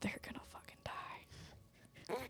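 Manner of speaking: quiet whispered mutter under the breath. A game master voices a character pulling away: muttering to himself. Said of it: "you hear him mutter to himself".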